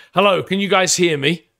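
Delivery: loud shout, as if across a distance. Narrating a scenario where an approaching man stops and calls out, shouting from a distance. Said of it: "he stops and he shouts".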